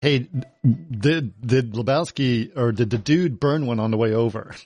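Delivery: ordinary talk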